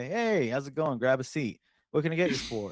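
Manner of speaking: laid-back, relaxed, welcoming drawled voice. Pitching a show opening, a bartender greeting guests: Woody Harrelson as Durnan. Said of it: "he's just like".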